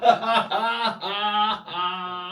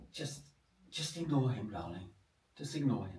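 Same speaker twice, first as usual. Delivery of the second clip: quiet, hushed voice; 8 semitones lower, 12 dB quieter than usual. Telling a joke, the husband answering his wife at the cinema: speaking quietly. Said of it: "just quietly".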